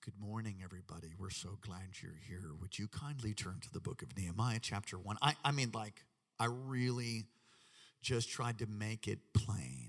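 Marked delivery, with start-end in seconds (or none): 0.0-5.2 put-on calm teaching voice, lower and quieter. Retelling how a church service was opened: retelling own calm teacherly tone. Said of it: "as calm and teachery".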